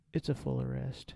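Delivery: play-acted, utterly unruffled, super calm, soft, even. Retelling what someone said on finding a full arrest: imitating a super calm voice. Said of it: "super calm".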